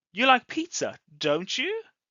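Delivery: pitch climbs on don't you. Teaching tag questions that express doubt: rising intonation on 'don't you'. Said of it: "If we're going up, we're not sure".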